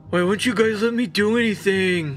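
whiny, put-on teenager voice, laid on. Summarizing a film plot, voicing a complaining teen character, whiny teenager voice. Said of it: "I'll give it my best teenager voice".

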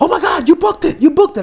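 put-on screaming. Retelling how an agent called about a booked job, imitating someone screaming. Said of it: "she's screaming at the top of her lungs".

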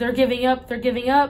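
put-on loud screaming cry. Retelling seeing paramedics stand up, retelling a scream. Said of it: "So I start screaming".

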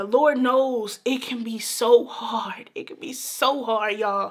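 slow, on the edge of crying, holding back tears. Encouraging listeners who have lost their jobs to keep going, holding back tears. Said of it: "I'm trying not to cry".

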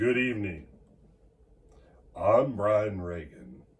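solemn, somber, dry delivery. Greeting viewers watching at nighttime, in a somber and dry tone. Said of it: "speaking to you in a somber and dry tone".

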